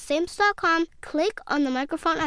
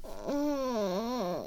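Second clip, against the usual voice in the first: groaning, quieter; 4 semitones lower, 7 dB quieter than usual. Charlie's mom, sick on Halloween, answers Charlie, groaning. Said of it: "she groaned".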